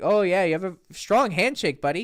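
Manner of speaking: very sarcastic, dripping, heavy mocking tone. Showing how to joke to the strong-handshake guy: imitating a sarcastic remark. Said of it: "very sarcastic".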